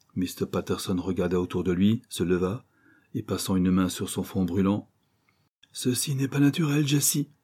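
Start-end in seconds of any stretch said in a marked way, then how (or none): 5.8-7.3 sudden, pitched-up outcry. Mr. patterson, hand on his burning forehead, speaks to jessie, crying out. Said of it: "s'écria-t-il".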